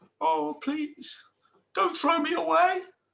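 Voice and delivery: tiny, very high little voice. Reading a story aloud, speaking as the talking pot, in a little voice. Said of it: "she heard a little voice".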